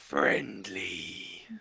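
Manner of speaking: breathy draconic voice. Voicing a huge dragon answering a player: breathy draconic voice. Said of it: "a breathy, like, draconic voice".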